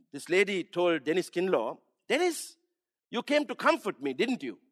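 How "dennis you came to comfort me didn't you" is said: accusatory, high swooping tone. A speaker retells a woman's words to her visitor, in a mock-accusatory tone. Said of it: "in a sort of an accusatory tone".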